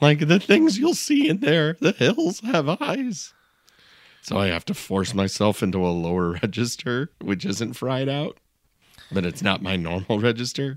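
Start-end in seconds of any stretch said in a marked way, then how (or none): 0.2-3.3 put-on very high-pitched old prospector voice. Speaker demos how their relaxed voice sounds, prospector warning voice. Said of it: "I just sound like a prospector warning you not to go into a town".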